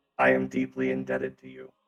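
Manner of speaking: little robot character voice. Playing a character receiving credits from another player, in a tiny robot voice. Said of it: "the tiny robot voice say".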